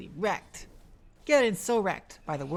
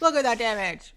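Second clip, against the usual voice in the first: loud, tongue-in-cheek, facetious excited hype; 4 semitones higher, 5 dB louder than usual. Commenting on a burst that did almost no damage: facetious mock hype. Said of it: "I was being facetious".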